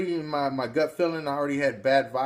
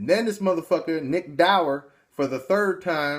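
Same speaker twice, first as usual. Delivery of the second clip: ordinary talk, nothing marked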